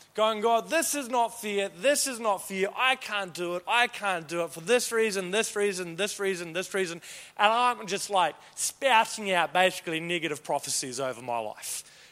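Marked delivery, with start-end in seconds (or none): none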